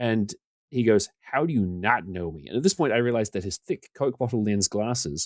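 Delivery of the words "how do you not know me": very bad, fake, put-on American accent. Retelling how a website editor came up to you, quote him in a terrible put-on american accent. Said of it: "the worst American accent you're ever about to hear".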